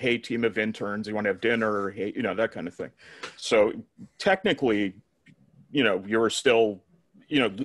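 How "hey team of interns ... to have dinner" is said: ordinary delivery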